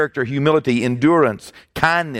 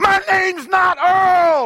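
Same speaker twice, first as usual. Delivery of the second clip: very high, frustrated acted-out scream, drawing out Earl. Telling a joke about a frustrated man at a game, acting out his scream. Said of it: "turns around and screams".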